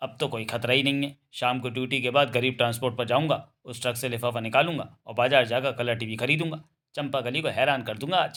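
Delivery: plain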